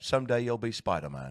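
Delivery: nasally British-sounding voice. Trying a quick impression after the other speaker's attempts: Michael Caine impression. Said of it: "You're good".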